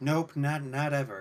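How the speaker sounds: openly sarcastic reply. Answering the pilot in character, whether they traveled space: sarcastic.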